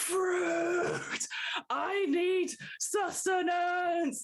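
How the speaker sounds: very high, shrill creature scream. Narrating to three players as a fruit salad kraken wakes: monster screaming. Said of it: "it sort of screams".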